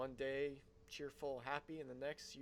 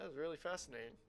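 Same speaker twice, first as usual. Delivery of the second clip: fake interest, clearly insincere. Speaker responding to a rumor about the Blood Moon, in an insincere tone. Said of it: "I'm sure that sounded very genuine".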